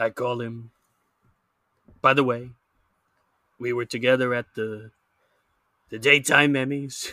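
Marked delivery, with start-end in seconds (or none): 2.0-7.1 louder put-on blustery politician voice. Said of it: "put on my worst Donald Trump voice".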